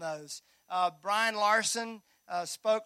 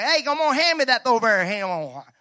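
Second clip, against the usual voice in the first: put-on very loud, booming Tennessee country accent; 3 semitones higher, 10 dB louder than usual. Speaker retelling a voice heard from the trees after getting out of the car, in a Tennessee accent. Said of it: "just in that Tennessee accent".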